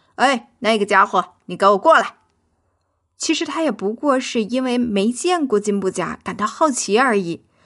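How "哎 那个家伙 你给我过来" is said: rude calling out, lower pitch. A puppy that has run into the vegetable garden calls to the newcomer, calling out rudely. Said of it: "就很不礼貌的叫道".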